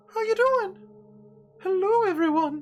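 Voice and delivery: very high, loud, chubby little mushroom character voice. Voicing a little chubby mushroom greeting the players from the ship: little chubby mushroom voice. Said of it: "That's the voice".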